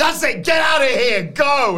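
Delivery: very high-pitched, shrill, very loud yelling. Retelling a wrestling advert, imitating the wrestlers yelling at her. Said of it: "they start yelling at her".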